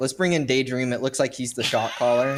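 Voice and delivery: normal talking voice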